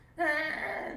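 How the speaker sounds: put-on screaming like a dying baby deer.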